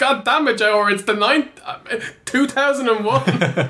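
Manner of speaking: high-pitched, laughing, snapping mock rant.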